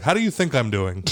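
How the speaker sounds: put-on irritated tone. Retelling a partner's curt answer about the baby: imitating her irritated tone. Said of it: "when you say it in that tone".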